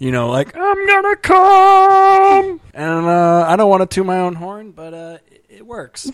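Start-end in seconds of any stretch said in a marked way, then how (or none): 0.6-2.6 loud squeal with the word "come" stretched out. Asked to show the climax of a dirty talk bit: Marvin the Martian voice. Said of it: "your Martian dirty talk".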